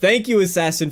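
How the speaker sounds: normal talking voice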